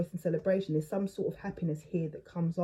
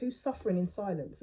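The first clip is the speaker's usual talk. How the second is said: usual speaking voice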